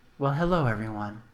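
very low, quiet, detached, unemotional and dispassionate. Voicing a man greeting the group as they burst into his room, dispassionate. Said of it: "in his particular dispassionate manner".

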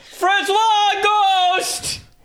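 shrill, very high yell, last word stretched. Searching for a missing person by calling out: yelling a name. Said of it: "I'm just gonna yell out".

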